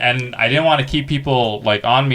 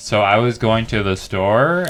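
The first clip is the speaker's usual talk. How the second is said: uptalk, pitch rising up at the end on "store"; 2 semitones lower than usual. Describing a style seen in L A comedy: upward inflection on store. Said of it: "the upward inflection thing".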